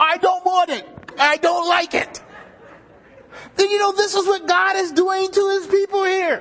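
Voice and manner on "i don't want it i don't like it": put-on words muffled as if through a full mouth. Retelling Clark's answer when asked what he was doing, imitating Clark, mouth full of candy. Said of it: "with a mouthful of candy".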